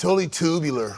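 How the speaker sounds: played-up put-on surfer dude voice and slang. Joking about how he'll act on camera: mock surfer-dude talk. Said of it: "I'm gonna be like".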